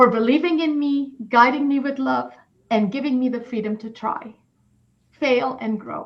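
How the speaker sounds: high, tearful, welling up, close to crying. Thanking parents, their first mentors, for believing in them, tearing up. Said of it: "See, I'm going to cry".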